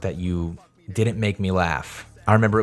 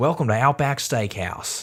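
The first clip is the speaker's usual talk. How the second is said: bad, clumsy, amateur put-on Australian accent; 4 semitones higher than usual. Speaker retells blurting a greeting to someone speaking Australian; bad Australian accent. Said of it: "in like the best accent I could do".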